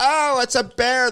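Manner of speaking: very high-pitched, stretched-out, drawn-out yell. Retelling a child spotting a bear: imitating someone yelling. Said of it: "They're, like, yelling".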